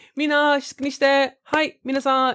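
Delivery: mock high-pitched voice. Telling Jay what she sounds like when mad, imitating her very high voice. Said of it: "She's like really high".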